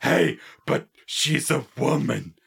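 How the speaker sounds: loud, obvious, big cartoon stage whisper. Retelling a TV episode where the Baron leans in: Homer Simpson stage whisper. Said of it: "obvious Homer Simpson whisper".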